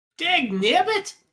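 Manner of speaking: put-on grizzled old prospector voice. Joking in a game session: 1870s grizzled prospector voice. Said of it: "talking like an eighteen seventies grizzled prospector".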